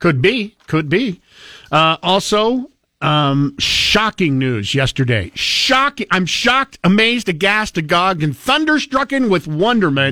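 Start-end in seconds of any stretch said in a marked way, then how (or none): 3.6-10.1 sarcastic feigned shock with swooping pitch. Announcing news to the other speaker, with sarcastic mock shock. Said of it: "Why do I already feel like this is sarcasm?".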